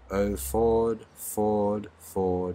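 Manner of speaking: very slow delivery, pitch sinking and volume fading. A supernatural voice calls out from above the listeners' heads; very slow. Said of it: "Very slowly".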